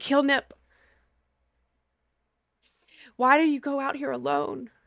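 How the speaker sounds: speaking through tears. A storyteller voicing Tarek as he holds the child, Tarek crying while speaking. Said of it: "is like straight up crying".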